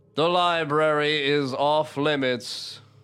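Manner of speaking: hollow voice echoing as if from inside stone. Voicing a statue whose voice echoes out to the listeners: hollow statue voice. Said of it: "kind of, like, hollow, like it's in the back of its head".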